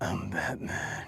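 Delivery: barely voiced, hushed whisper, very close. Mocking someone who whispers in their ear, whispered Batman voice. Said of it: "it's like you're whispering in my ear".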